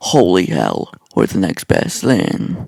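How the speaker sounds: put-on rough hard-man voice. Reading Batman's lines from a comic: Batman doing Clint Eastwood voice. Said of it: "doing some lame-ass Clint Eastwood impersonation".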